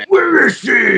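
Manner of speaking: loud, very high, over-mouthed exaggerated superhero bark.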